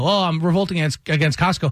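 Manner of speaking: usual speaking voice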